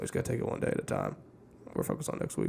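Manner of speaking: very quiet, hushed, breathy delivery. Answering a remark about how Belichick would handle it: Belichick impersonation. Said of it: "That's my Belichick impersonation".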